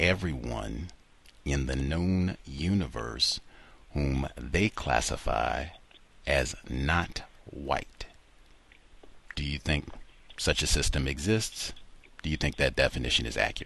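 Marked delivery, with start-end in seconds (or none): 0.0-8.1 slow delivery. Repeating a definition so the other speaker can follow it: slow. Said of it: "I'll give it again slow".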